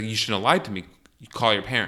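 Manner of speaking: ordinary delivery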